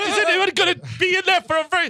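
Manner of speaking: high, loud, urgent and desperate pleading.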